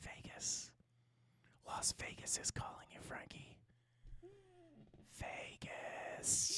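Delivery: very quiet, slow, hushed put-on whisper. Reading out a viewer's message aloud: put-on quiet whisper. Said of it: "says in a quiet whisper".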